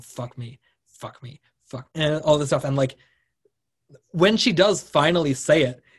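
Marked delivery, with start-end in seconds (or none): 0.0-1.9 hushed whisper, much quieter, slower. Retelling what a man whispered to a woman in a hotel room, whispering. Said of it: "he's like whispering".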